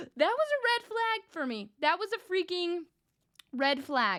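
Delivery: heated, worked-up outburst, vented hard. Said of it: "I'm yelling at you guys".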